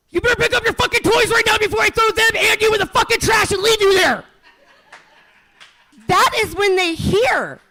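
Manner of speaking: mock, very high-pitched, shrill, rapid furious yelling. A mother acts out what her kids hear when told to tidy, retelling a furious yell. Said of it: "why are you yelling at me?".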